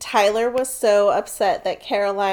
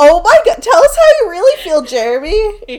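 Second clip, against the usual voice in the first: ordinary delivery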